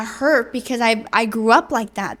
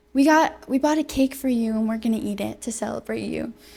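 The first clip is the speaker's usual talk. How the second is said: put-on tearful crying voice, quieter; 5 dB quieter than usual. Retelling a mother's reply on a birthday phone call: imitating mom crying. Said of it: "she starts crying and she goes".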